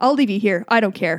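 deadpan, flat, uncaring tone. Imitating moms in Target who threaten their screaming kids: deadpan mom threat. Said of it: "these dead comments that they make".

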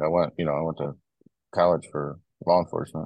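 normal talking voice

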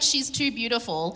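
plain

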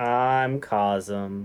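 disappointed, deflated, sad, low voice. A podcast co-host gives their name in the intro, sounding sad. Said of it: "You sound sad about it".

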